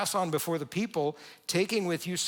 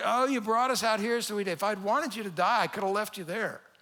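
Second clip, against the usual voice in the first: mock-whiny, griping, accusing tone; 4 semitones higher than usual. Acting out people accusing their leader, mock-whiny complaining. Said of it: "complaining and griping and accusing".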